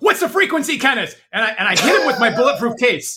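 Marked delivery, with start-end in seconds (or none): 0.0-1.2 high, shouted battle-cry yell. Charging directly at the guard in character, yelling in character. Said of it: "I run directly at the guard and I yell".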